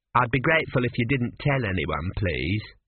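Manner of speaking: usual speaking voice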